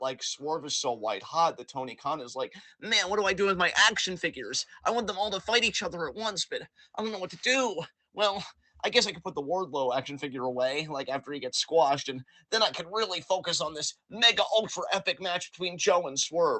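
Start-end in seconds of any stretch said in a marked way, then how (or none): 2.8-16.6 derisive mocking voice, a touch higher. Acting out Tony Khan's thoughts: mocking Tony Khan voice. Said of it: "why I'm doing such a mocking voice".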